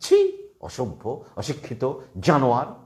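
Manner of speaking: slow, drawn-out, disgusted sneering voice.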